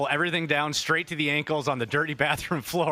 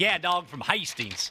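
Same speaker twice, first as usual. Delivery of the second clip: put-on Southern accent; 3 semitones higher than usual. Retelling what a man from Hastings said: imitating a Southern accent. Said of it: "that accent".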